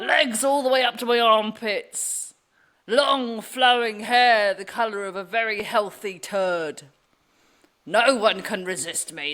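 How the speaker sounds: stagey put-on witch voice, fully in character. A witch character introduces herself, in a put-on Gary the Witch voice. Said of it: "it's an error choosing that voice".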